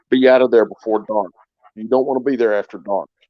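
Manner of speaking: put-on very serious, grave tone. Retelling how a man warned him to leave before dark, very serious tone. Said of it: "in a very, you know, serious tone of voice".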